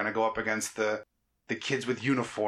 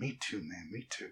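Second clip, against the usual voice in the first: barely audible, very quiet, slow, drawn-out mumble; 3 semitones lower, 10 dB quieter than usual. Picturing a dad at the movies, imitating him muttering under his breath. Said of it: "him just muttering under his breath".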